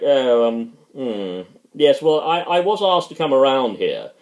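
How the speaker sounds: ordinary delivery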